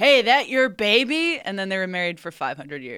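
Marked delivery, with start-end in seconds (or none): 0.0-1.4 slow, loud, drawn-out, high-pitched catcall. Retelling how the grandfather first pulled up to the grandmother: imitating a catcall. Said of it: "my grandfather catcalling my grandmother".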